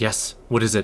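ice-cold, icy delivery. A disapproving woman answers someone approaching her, in a tone cold as ice. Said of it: "In a tone cold as ice".

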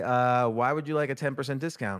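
plain

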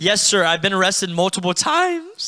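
mimicked voice crack. Retelling what they said to the police, retelling with a cracking voice. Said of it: "That voice cracked".

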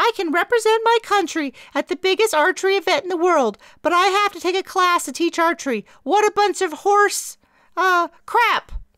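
loud, very high-pitched falsetto. Mary repeats what Minx complained about, falsetto imitation of Minx. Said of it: "Mary broke into a falsetto voice".

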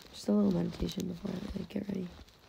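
mumbled, unclear speech. Asked what they're doing, the speaker explains before getting ready: mumbling. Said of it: "You're mumbling".

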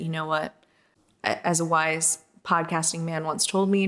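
normal talking voice

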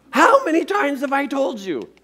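pretend angry blow-up. Imitating a parent finding one sock on the floor: imitating a parent blowing up. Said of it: "it goes from a good to a kaboom".

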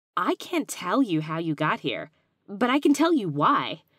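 loud, overeager, too enthusiastic rising delivery. The gingerbread boy, moving closer to Clayton, answers him overly enthusiastically. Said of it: "said with a bit too much enthusiasm".

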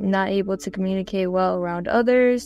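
ordinary talk

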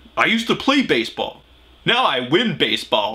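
tough, self-serious TV cop tone. Mocking a baseball player who sounds like he's in Law and Order: imitating a tough Law and Order-style guy. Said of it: "sounds like one of them guys that thinks he's in, like, Law and Order".

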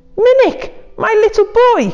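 very high, crying-out call. A father, finally finding his lost son, crying out to him. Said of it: "cried his father".

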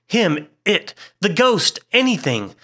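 frantic, wild, high-pitched blurted outburst. Narrator reads a man answering the others' question about what he saw: wildly. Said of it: "said Hurst wildly".

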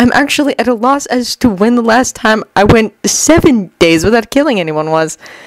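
plain reading voice

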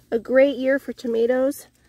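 ordinary talk, nothing marked

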